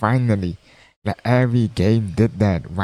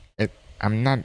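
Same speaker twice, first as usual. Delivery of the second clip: plain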